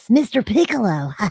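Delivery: put-on hoarse, scratchy, raspy little-kid character voice. Explaining how she was directed to voice her character, demonstrating a raspy kid voice. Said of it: "raspy like this".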